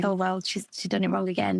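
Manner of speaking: normal talking voice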